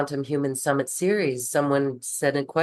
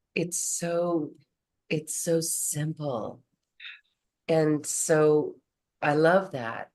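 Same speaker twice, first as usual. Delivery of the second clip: tearful, moved to tears. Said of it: "That's why I am moved to tears".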